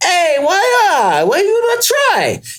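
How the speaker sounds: put-on Italian accent, very high and swooping. Retelling a street market spaghetti seller calling out: imitating an Italian vendor's accent. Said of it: "get a less annoying accent too".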